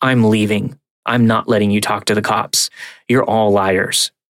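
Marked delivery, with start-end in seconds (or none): none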